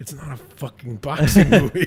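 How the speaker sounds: grumbled retort as an aside. Retelling a movie scene where a character replies: imitating someone muttering under breath. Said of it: "And under his breath".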